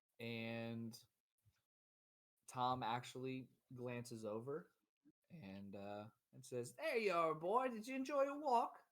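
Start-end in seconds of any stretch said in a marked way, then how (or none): 6.8-8.7 put-on high, loud British accent. Game narrator voicing Tom as the player comes in the back door, Tom in British accent. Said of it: "went British real fast".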